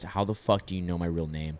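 low, put-on grave, dead serious delivery. Retelling what an old acquaintance said: imitating someone dead serious. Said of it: "from a super bubbly girl to just super dead serious".

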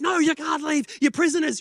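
mock-angry yelling. Retelling how a woman refused to let them leave, imitating angry yelling. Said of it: "she's angry and she's yelling at us".

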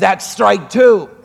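low, muttered aside under the breath. Telling a joke, quoting the grandmother: imitating muttering under breath. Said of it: "under her breath".

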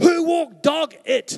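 very loud, slow, high-pitched, drawn-out holler. Retelling how a woman in the church shouted out about the carpet: imitating a loud shout. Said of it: "shouts out quite loudly".

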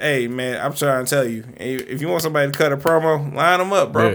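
ordinary talk

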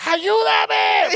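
reenacted scream. Telling a story about confronting a man while holding a knife: retelling a scream. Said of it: "I'm just like screaming".

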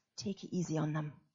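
toned-down, gentle delivery. Retelling what the coach said in the halftime huddle: imitating a quieter voice. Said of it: "a quieter voice and said".

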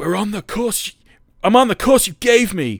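very high, loud, put-on American accent. Retelling a show scene where a lost pilot answers the navigator: American accent. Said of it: "that's an american accent".

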